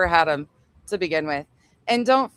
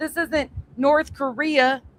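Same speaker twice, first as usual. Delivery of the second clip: mock, high, worked-up angry ranting outburst; 7 semitones higher than usual. Retelling how someone gets amped up and pissed off: imitating an angry rant. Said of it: "she'll get into fucking rants and say that".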